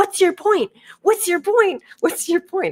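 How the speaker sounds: high-pitched, shrill, hammering repeated yell. Retelling how a woman storms back into the store at the speaker, imitating someone yelling. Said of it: "starts yelling at".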